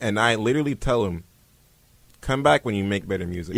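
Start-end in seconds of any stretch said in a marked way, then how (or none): none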